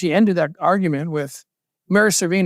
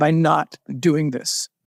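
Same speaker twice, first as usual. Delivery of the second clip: put-on stern, rebuking voice; 2 semitones lower than usual. Retelling what his wife said to him on the phone: imitating a stern wife. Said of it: "she said to me very sternly".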